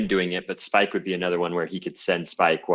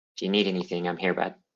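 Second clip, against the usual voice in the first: soft whisper, quieter; 5 dB quieter than usual. Comforting a grieving companion as you leave, whispering in his ear. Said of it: "I just whisper in his ear".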